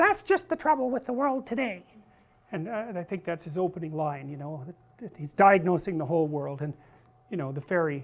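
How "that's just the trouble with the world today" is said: mock sarcastic falsetto, much higher than normal. Speaker acts out a pompous character's opening line, in mocking sarcastic falsetto. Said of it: "[sarcastic falsetto]".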